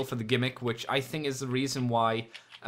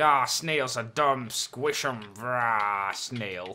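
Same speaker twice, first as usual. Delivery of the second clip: slow, put-on toy monster truck voice. Pretending the toy truck squishes a snail, voicing the toy truck. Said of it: "let's pretend".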